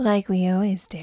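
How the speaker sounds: playfully put-on sultry voice. Podcast host introducing the movie breakdown, in a mock-sultry voice. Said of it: "Very sultry".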